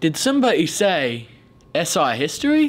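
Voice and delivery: put-on English-sounding accent. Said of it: "how did living at S I give you a British accent?".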